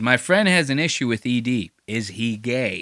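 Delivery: ordinary delivery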